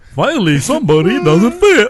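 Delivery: high, swooping, bouncy cartoon dog voice. Joking about a man with a huge head, the speaker quotes Goofy in a Goofy voice. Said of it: "that was a good Goofy voice".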